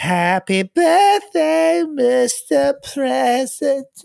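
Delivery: slow, very high creaky cooing. Mocking a drunk awards show presenter: Marilyn Monroe impression. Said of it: "What kind of Marilyn Monroe Walmart version".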